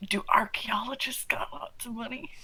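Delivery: attempted whisper, not quite whispered. Playing a character, leaning over to ask about the archaeologist: attempted whisper. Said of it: "We're not very good at whispering".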